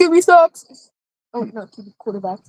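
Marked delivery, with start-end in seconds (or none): 0.0-0.9 sudden, high yell blurted right out. Blurting out a sudden remark: yelling out loud. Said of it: "I didn't mean to yell that out loud".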